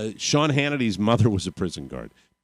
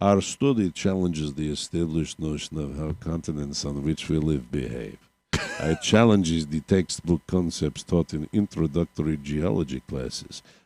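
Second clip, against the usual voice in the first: put-on Russian accent, lecturing professor voice; 6 semitones lower, 4 dB quieter than usual. Reading a professor's quote aloud in a put-on russian accent. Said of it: "I'm just gonna give him a Russian accent".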